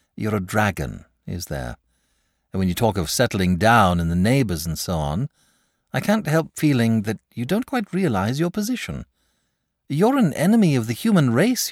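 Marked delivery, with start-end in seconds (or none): none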